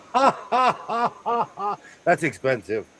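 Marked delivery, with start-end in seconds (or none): 0.2-1.8 theatrical, exaggerated, high, very slow villain laugh. Reacting to an expensive cutting mat with a supervillain laugh. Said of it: "Let me let out my supervillain laugh".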